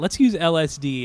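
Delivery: ordinary delivery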